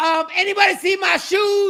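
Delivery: mock very high, shrill, loud yell. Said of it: "Why are you yelling?".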